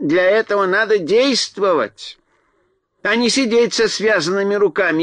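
sly, needling tone. Narrating a fairy tale, the crow answers the Tin Woodman, snide. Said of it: "ехидно сказала ворона".

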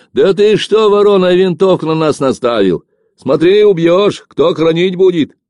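shrill, very high-pitched, taunting, jeering yell. Narrator reading a man turning to taunt the lanky escort guard, mocking shout. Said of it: "он насмешливо крикнул".

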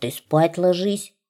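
plain

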